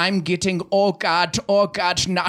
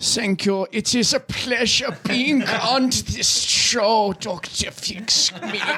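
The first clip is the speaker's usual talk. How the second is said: put-on courteous tone with a German accent; 3 semitones higher than usual. A guest on the show dr. fix me thanks the host, in a german accent. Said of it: "It sounds like you have a German accent".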